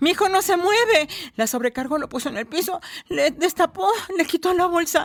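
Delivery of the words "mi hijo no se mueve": desperate, high, loud scream. Retelling the moment after the flight attendant's announcement: retelling a scream. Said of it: "Grité".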